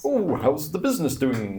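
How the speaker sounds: high, swooping, bumbling character voice. Playing a character in a role-play scene, using a bumbling voice. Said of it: "He's a bit more like like bumbling voice".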